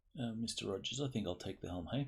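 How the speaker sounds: usual speaking voice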